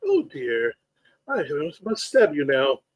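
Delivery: acted polite robotic voice. Answering a co-host's Futurama reference, in a polite Futurama robot voice. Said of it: "The original overly polite robot from Futurama".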